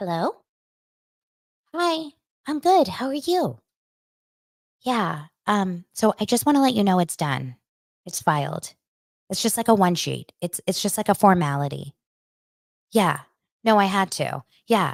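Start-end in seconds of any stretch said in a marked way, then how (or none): 0.0-8.7 chatty, talkative phone-call voice. Speaker imitates her mom talking on the phone, in a suddenly high voice. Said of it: "Her voice gets like all of a sudden so high".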